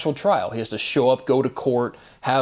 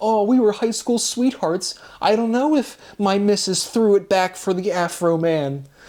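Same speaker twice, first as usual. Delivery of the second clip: put-on high, weepy blubbering through tears; 8 semitones higher than usual. Speaker mocks a man being questioned about his wife: imitating someone crying. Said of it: "he's like crying like a cuck".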